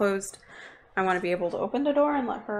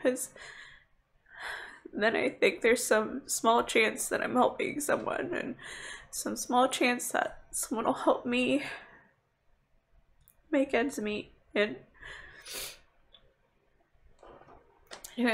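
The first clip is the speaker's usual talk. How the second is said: talking through tears, crying; 3 semitones higher than usual. A streamer talks to their viewers, crying. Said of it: "I'm sorry, I'm crying".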